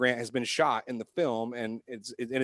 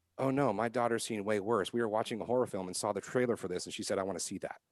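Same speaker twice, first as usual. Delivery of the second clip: put-on deadpan, straight-faced, matter-of-fact tone; 3 semitones lower, 6 dB quieter than usual. Retelling a mom's reply about her daughter: imitating a mom's straight-faced reply. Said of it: "she looks at me with a straight face and she goes".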